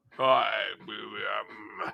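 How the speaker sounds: very slow, low, creaky, haunting ghost voice. Speaker reading out a chat message greeting in a scary voice. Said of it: "said Haunted Coachman with a scary voice".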